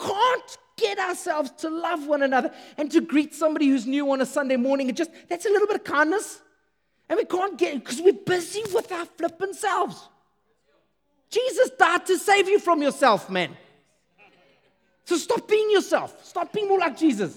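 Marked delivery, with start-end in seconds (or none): 7.1-17.4 impassioned, passionate, preacher-like shouted delivery. Speaker addressing the guys listening, yelling. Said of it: "I'm not yelling at you".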